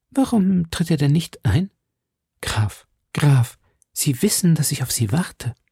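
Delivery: quavering, unsteady, trembling voice. A woman calls to the count she is waiting for, in a trembling voice. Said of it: "sagte Milady mit zitternder Stimme".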